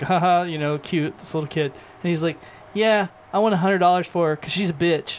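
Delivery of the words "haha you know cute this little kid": mock-chuckling, amused. Retelling an on-air announcer's reaction to a little kid, imitating a chuckle. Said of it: "the announcer chuckles".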